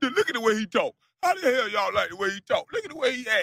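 very high-pitched, ranting meltdown yell. Speaker recounting a man's meltdown at the screen, retelling his yell.

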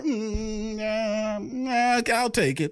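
whiny, very slow drawl with the Mm dragged out. Imitating someone who won't answer yes or no straight: whiny Mickey Loomis voice. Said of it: "It's this whiny thing".

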